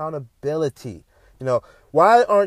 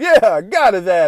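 loud, slow, amused mock laughing delivery; 3 semitones higher, 5 dB louder than usual. Retelling onlookers after the shooting: imitating people laughing. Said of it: "people were still laughing like".

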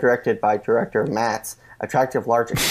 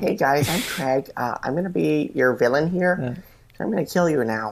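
put-on American accent; 4 semitones higher than usual. Imitating a villain character introducing himself: put-on American accent. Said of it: "He has like an American accent on".

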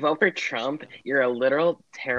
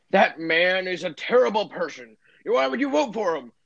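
put-on high-pitched mild yell in an old voice; 5 semitones higher than usual. Retelling an old person screaming across the street at a Biden sign holder, imitating someone screaming. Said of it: "they were just screaming across the street".

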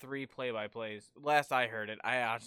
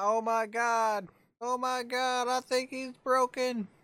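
put-on screaming announcer voice, higher and louder; 12 semitones higher, 7 dB louder than usual. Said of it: "he does it in accent and everything".

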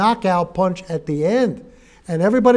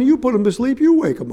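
put-on cheeky man's yell with swinging pitch; 4 semitones higher than usual. Retelling the reply in the joke to the preacher: imitating a man yelling back. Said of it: "the guy yelled back at him".

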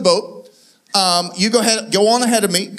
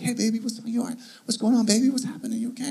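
soft, hushed, half-whispered voice; 8 dB quieter than usual. Retelling comforting a frightened woman lying in bed, whispering. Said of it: "I'm kind of whispering".

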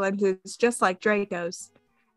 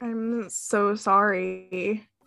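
shy, timid voice; 3 dB quieter than usual. Reading a story aloud, a male character speaks to the narrator in a shy voice. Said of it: "he said in a shy voice".

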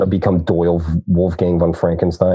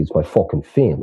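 tough-guy mob boss voice, leaning into it. Joking that a quote sounded like The Sopranos: The Sopranos mobster voice. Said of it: "a line from the script from The Sopranos".

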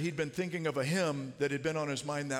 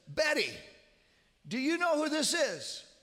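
put-on very high, loud, carrying voice; 12 semitones higher than usual. Retelling how he leaned over to his mother-in-law, who can't hear well: imitating someone speaking loudly. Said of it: "he says loudly".

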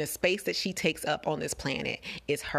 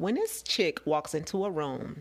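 ordinary talk

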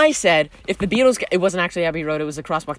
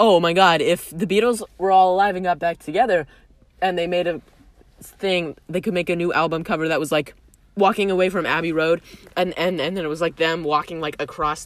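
plain

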